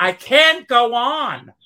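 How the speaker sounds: very loud, very slow, drawn-out high scream. Retelling throwing oneself on the floor at eight: imitating own past scream. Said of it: "I threw myself on the floor and I screamed".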